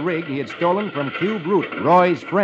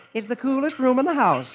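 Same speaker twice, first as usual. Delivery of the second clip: sweet, pitched-up voice; 8 semitones higher than usual. Reading a comic, a woman stops her sewing machine and smiles at him; saying sweetly. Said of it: "and says sweetly".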